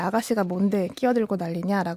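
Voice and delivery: ordinary talk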